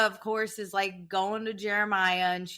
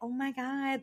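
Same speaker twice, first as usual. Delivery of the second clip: put-on high, flirty, gushing voice; 5 semitones higher, 6 dB quieter than usual. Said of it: "they change their voice".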